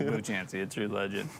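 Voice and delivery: normal talking voice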